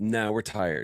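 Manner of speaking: mock sulky, petulant teenage voice. Describing a computer that refuses to update, imitating a petulant teenager computer. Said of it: "Computer sounds like a teenager".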